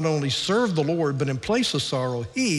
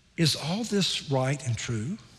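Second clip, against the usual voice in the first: slow, soft, hushed half-whisper; 5 dB quieter than usual. Retelling what his wife half-whispered in the back row: imitating someone half-whispering. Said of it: "she whispers".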